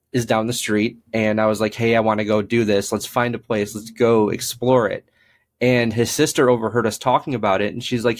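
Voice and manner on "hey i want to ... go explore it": usual speaking voice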